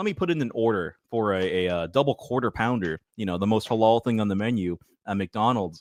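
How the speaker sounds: usual speaking voice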